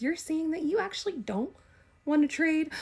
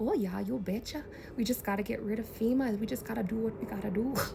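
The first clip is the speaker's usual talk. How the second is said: low, sweet, kindly put-on Midwestern woman's accent; 4 semitones lower, 5 dB quieter than usual. The speaker quotes a woman, imitating her Midwest accent. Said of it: "a woman with a Midwest accent".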